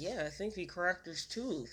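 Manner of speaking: soft, quiet, under-the-breath muttering. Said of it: "co-signed that under her breath".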